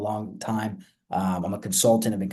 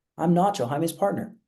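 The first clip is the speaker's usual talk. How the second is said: upward rising tone at the end of partner; 7 semitones higher than usual. Demonstrating a self-introduction that assumes familiarity, rising pitch on partner. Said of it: "It's an upward tonality, so it's assume".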